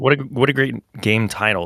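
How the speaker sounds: normal talking voice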